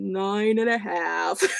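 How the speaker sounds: cartoon donkey voice, stretched out. Scoring paper while jokingly slipping into an Eeyore voice. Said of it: "That was a little bit of E-".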